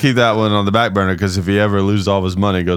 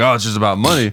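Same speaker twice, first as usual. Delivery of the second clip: ordinary talk, nothing marked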